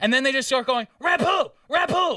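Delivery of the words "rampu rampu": high, furious, really angry repeated yelling. Retelling how they shouted a word to turn something on, imitating a really angry shout. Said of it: "really angry".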